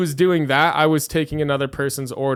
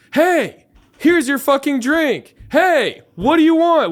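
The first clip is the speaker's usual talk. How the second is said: acted fed-up, angry, very shrill, very high yelling; 11 semitones higher, 3 dB louder than usual. Retelling snapping at a customer at the bar: imitating own angry yelling. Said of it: "yelling it at her in her face".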